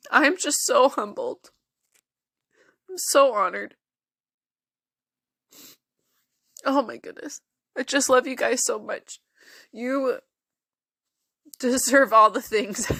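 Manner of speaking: in tears, crying while speaking. A podcast host thanks listeners for making them a top podcast, in tears. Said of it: "here I am in tears".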